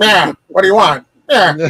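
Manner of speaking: put-on acted old gangster voice. Retelling a comedy skit about dodging a wife: Edward G. Robinson voice. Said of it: "puts on the Edward G. Robinson voice".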